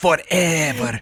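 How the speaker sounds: mock Spanish-accented voice. Retelling how a man from Spain said a word in a Nintendo Direct, imitating a Spanish man. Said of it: "some some dude from Spain. He was like".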